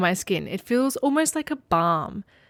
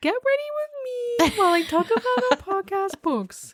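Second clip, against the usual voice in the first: put-on voice, pitched higher; 14 semitones higher than usual. Joking about a new venture: get ready with me voice. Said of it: "that exact phrase in that exact voice".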